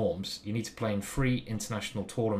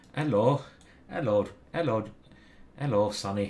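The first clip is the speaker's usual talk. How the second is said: bad, appalling, fake Welsh accent; 4 dB louder than usual. Speaker tries out the welsh accent she offered to do, bad welsh accent. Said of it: "you don't want to hear my Welsh accent ... I can't do accents. That was appalling".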